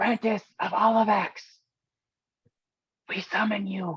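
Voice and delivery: hushed whisper. In a group roleplay scene, calling out to someone, whispering. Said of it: "You don't have to whisper".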